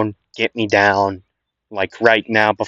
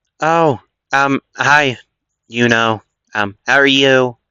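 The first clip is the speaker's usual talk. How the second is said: hesitant, slow, slightly nasal voice; 3 semitones higher than usual. Voicing Astro greeting someone after she has detransformed: Astro's voice. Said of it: "This does sound more like her".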